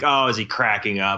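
ordinary talk, nothing marked

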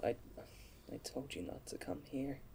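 quiet low voice. In a role-play, the player voicing Serena speaks quite low. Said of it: "Serena just says quite low".

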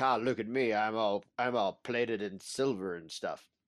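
show-off, boastful hero character voice. Recapping an episode, acting out the Mandalorian showing off his new armor: imitating the Mandalorian. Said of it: "He's like".

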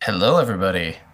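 big broadcast announcer voice. Podcast guest greeting everybody on arrival: announcer voice. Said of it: "Announcer voice".

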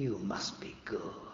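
acted whispered voice. Retelling an inner voice that spoke while driving home: retelling a whisper. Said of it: "a voice deep, deep, deep down inside me that whispered".

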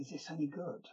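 very quiet, hushed half-whisper. Retelling a question asked beside the set during filming: imitating Duncan half-whispering. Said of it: "he sort of whispered over to me".

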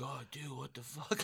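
barely audible, very quiet mumbled muttering. Retelling how an injured friend reacted: imitating someone muttering.

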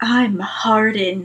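put-on seductive, sexy podcast host voice. Podcast host introduces a character they will read: sexy podcasting voice. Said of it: "This is my sexy podcasting voice".

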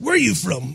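put-on tough gangster voice with a Mexican accent. Retelling a man asking where they were from, in an El Chapo-style gangster accent. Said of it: "That's my kind of El Chapo gangster drug dealer".

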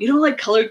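taken-aback, surprised, disbelieving tone. Retelling a car salesman's reaction: imitating someone surprised. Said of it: "he was so surprised".

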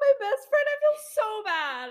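high-pitched, tearful crying voice.

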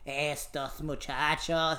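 put-on voice like an elderly Cuban grandmother. Repeating a Spanish phrase the way the speaker's grandmother says it, in an old Cuban grandmother voice. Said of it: "That's what the old Cubans sound like".

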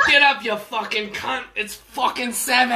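very loud fake Australian accent. Retelling what a man's alarm suddenly says one morning, in a put-on Australian accent. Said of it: "just swapped over to Australian".

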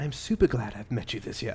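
very quiet, soft put-on British accent. Reading Suzanne's message aloud to the others: put-on British accent.

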